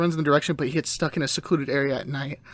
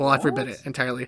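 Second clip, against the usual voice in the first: ordinary talk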